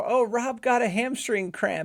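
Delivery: mock, high-pitched yell, hollered across a distance. Retelling how somebody yelled over to a passing boat: imitating someone yelling. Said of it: "somebody yells over".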